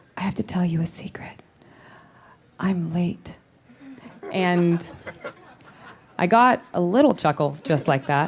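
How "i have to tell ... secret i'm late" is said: soft, hushed, secretive whisper. Retelling an improvised line said to a horse in a scene: retelling a whisper. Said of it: "I whispered to the horse and I said".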